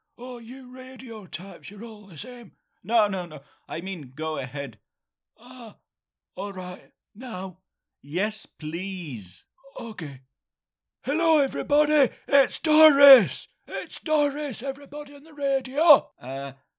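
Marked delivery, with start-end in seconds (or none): 11.0-16.6 shouting, much higher and louder. Told to go ahead, greeting everybody listening on the radio, shouting. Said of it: "you don't need to shout".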